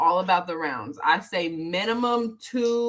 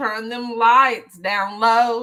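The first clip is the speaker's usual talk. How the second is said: put-on country accent with raised voice; 4 semitones higher, 6 dB louder than usual. Asked to say something in the country way, the speaker tries a country accent. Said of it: "Not that country accent".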